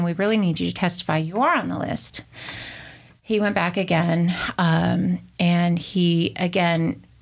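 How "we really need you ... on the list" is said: plain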